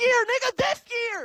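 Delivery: shouting. Arguing about the Miami Heat with the others: yelling. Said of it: "Why are you yelling".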